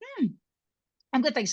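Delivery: muffled speech through a mouthful. Podcast co-host answers a greeting while taking a mouthful of coffee. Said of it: "I literally took a mouthful of coffee".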